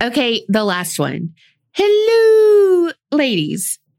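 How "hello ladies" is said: hello stretched out, very high pitch. Reading a listener's email greeting aloud: Mrs. Doubtfire voice. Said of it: "Insert your best Missus Doubtfire voice here".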